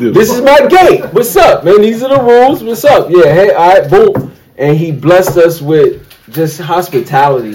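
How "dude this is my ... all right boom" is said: pitched-up Brooklyn dude voice, New York street talk. Describing a host who welcomed the group, imitating a Brooklyn dude. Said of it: "he kind of was like a Brooklyn dude".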